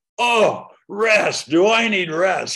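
very loud, slow, high, drawn-out shout. Retelling what a taxi driver yelled back: imitating a man yelling. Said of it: "And he yells".

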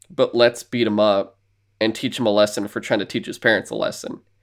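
ordinary delivery

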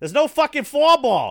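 very high, very loud, yelled put-on Boston accent. Retelling what a gaming friend said, imitating his Boston accent. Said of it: "I'm trying to do his accent".

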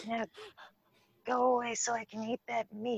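whispered voice. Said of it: "you just hear a whispered voice in your ear".

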